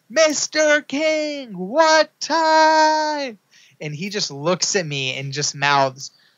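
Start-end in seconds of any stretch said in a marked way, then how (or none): 0.2-3.4 mock shout, very high, very slow and time-stretched. Retelling calling out in front of a windshield: retelling a shout. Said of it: "flailing my arms".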